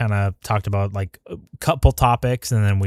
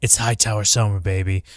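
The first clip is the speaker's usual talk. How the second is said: cocky, full-swagger, boastful delivery. Imitating how badass Ormund sounds before the helmet goes on. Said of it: "He sounds so badass before then".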